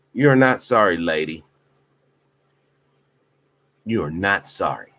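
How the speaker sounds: upset tone with the words said twice. Speaker confronting a lady over her apology: upset. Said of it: "I'm just upset".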